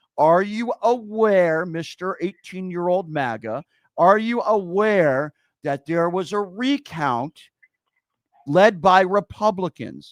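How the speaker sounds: slow, deliberate, drawn-out, pointed delivery. Arguing about a recount, asking the question slow and deliberate. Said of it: "Let me say it slowly for you".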